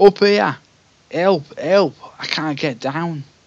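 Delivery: put-on high, loud Cockney accent sliding into Scouse. Reading a gamebook aloud, voicing a trapped character calling for help: Cockney accent drifting into Liverpudlian. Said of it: "he sort of started Cockney and ended up Liverpudlian".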